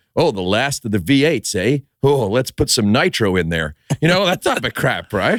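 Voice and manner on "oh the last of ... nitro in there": exaggerated, over-the-top dubbed-film American accent. Explaining how a film was dubbed for america, acting out a line in an over-the-top american accent. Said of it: "with the American accent over the top".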